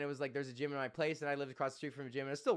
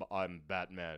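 very low, dead-serious hero voice; 9 semitones lower, 4 dB quieter than usual. Comparing how the hero talks in and out of costume: serious Batman voice. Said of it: "he's like got his serious voice".

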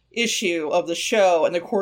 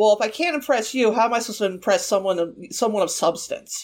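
play-acted petty, snide, needling, passive-aggressive jab; 3 semitones higher than usual. Retelling a character's line to her: passive-aggressive Danny impression. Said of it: "gets real passive-aggressive and shitty with her and says".

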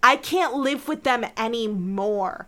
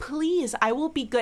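put-on begging tone, quieter; 3 semitones higher than usual. Retelling how a character begged not to be sent back: retelling Kirk Charlie begging. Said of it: "Kirk Charlie is begging".

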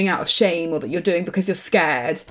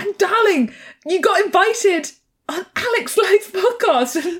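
put-on excited voice, higher; 13 semitones higher than usual. Retelling a phone call overheard, imitating an excited mother-in-law.

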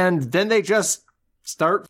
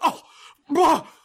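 very high, incredulous, comically absurd scoffing huff; 12 semitones higher than usual. Imitating how a character reacts: imitating a comically absurd huff. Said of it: "He's so comically absurd".

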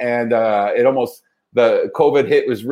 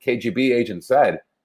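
plain

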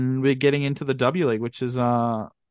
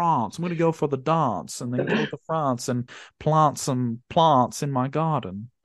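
put-on upper-class Australian accent. Imitating how Joey Lynch from SBS might talk, posh Australian accent. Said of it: "very posh Australian accent? He probably says".

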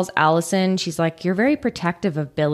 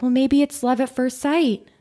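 sunny, high, hopeful, optimistic lilt; 6 semitones higher than usual. Retelling what Jane said on a first date: imitating optimistic Jane. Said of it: "being the optimist".

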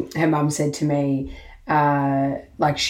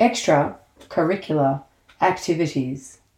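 robotic, computerized voice-assistant voice. Introducing the episode's topic, the podcast host speaks in a Siri voice. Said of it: "Do I sound like Siri then?".

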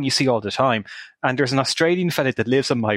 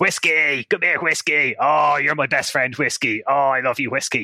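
put-on Australian accent. Retelling hearing an Australian man walking down the road, imitating an Australian accent. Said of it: "you just hear this Australian guy walking down the road".

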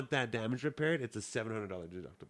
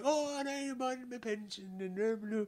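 mock overdone weepy old-lady voice, high and slow; 10 semitones higher, 3 dB quieter than usual. Retelling a crash as the other driver, imitating a tearful lady hamming it up. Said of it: "hamming it up".

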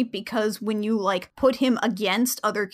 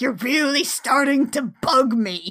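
put-on villain voice; 2 semitones higher than usual. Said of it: "the voice he uses".

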